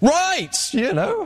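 put-on bellowing shout, pitched very high. Over music and laughter, answering a man holding the microphone, re-enacting bellowing back. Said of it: "I bellowed back to be heard".

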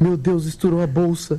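usual speaking voice

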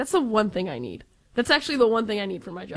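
ordinary talk

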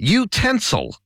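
American accent. Asked to give one word from the role: American accent. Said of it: "Just give me one word in Ameri-".

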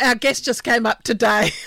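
speaking through laughter. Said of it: "sorry, I'm laughing".

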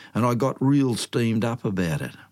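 plain reading voice

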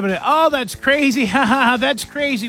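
put-on little pity laugh. Acting out a reply to someone who has lost their listener, mock pity laugh. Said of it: "with a little laugh, little pity laugh".

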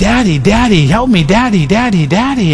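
put-on tearful little-kid begging, crying. Retelling how a friend's son cried out while being held down, imitating a child crying. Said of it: "and crying".

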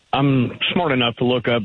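normal talking voice

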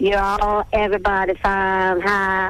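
slow Texas drawl. Showing the accent you had to lose for show business, texas accent. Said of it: "get rid of the Texas accent, or rather".

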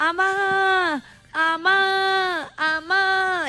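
drawn-out squawking parrot shout in long calls. Telling about the parrot at home, imitating a parrot shouting. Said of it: "la lorita gritaba".

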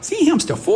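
put-on very high, little squeaky toddler voice.

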